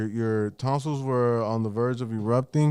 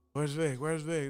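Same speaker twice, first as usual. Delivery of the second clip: hushed, panicked, frantic voice; 4 semitones higher, 8 dB quieter than usual. Retelling his grandma bursting into his house looking for him: imitating a frantic grandma. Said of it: "she just comes in my house frantic".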